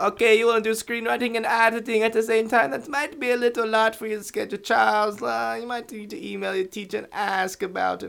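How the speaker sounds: put-on very high voice, vaguely Jamaican-sounding accent. Quoting an Eastern European woman's words, in a Jamaican-sounding accent. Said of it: "Why was that, like, Jamaican?".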